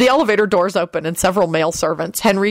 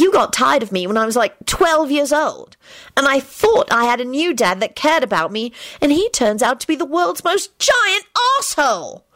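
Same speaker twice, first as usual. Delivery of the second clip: put-on high, bitter girl's voice. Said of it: "Rosie told Henry bitterly".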